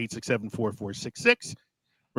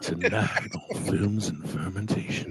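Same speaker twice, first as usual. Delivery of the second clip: put-on whispered late-night radio DJ voice, hushed and slow; 5 semitones lower, 5 dB quieter than usual. Joking about another speaker whispering, put-on midnight DJ voice. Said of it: "talking like a, like a midnight D J".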